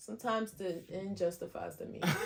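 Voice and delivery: soft, casual, offhand, unbothered, nonchalant. Answering a questioner about obtaining evidence illegally, nonchalant. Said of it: "You said that so like nonchalantly".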